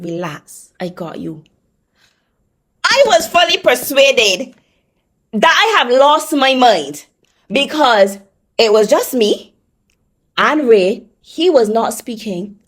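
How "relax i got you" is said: very hushed, quiet, low, soothing, calming voice. Retelling a voice you heard speak to you, retelling a calming voice. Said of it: "It was a real calming voice".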